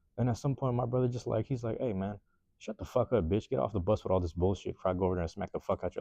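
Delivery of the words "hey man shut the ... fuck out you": ordinary talk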